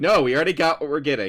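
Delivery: put-on shouting. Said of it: "yelling at her".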